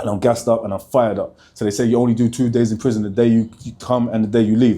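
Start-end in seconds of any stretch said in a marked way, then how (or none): 1.5-3.0 excited, hurried, fast talking. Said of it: "I know I'm talking fast".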